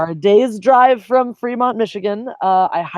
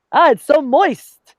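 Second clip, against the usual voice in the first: creepy put-on Yiddish accent, high, very slow; 7 semitones higher, 3 dB louder than usual. Joking about a Yiddish-sounding word, put-on Yiddish accent.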